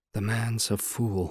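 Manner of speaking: very quiet, hushed, under the breath. A legal assistant comments to the narrator passing his desk, said very quietly. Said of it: "he said very quietly".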